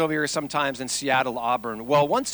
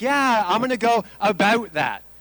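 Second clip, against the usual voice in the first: put-on Canadian accent, "about" said the Canadian way; 7 semitones higher, 4 dB louder than usual. Describing how Canadians talk, mimicking them in a Canadian accent. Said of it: "their Canadian accent".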